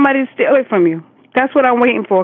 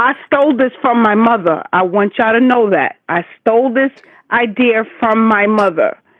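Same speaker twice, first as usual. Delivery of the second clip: ordinary talk, nothing marked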